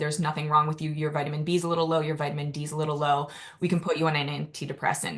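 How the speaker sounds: plain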